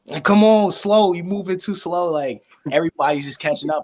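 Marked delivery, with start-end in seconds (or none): 0.3-2.2 loud, high-pitched yell.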